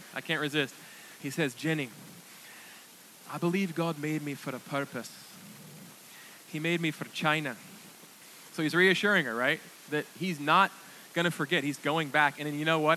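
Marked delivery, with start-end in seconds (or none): 1.5-7.6 gentle, soft put-on Scottish burr accent. Retelling how a man calms a woman down, the speaker invokes a Scottish burr. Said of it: "I'm going to invoke a Scottish burr".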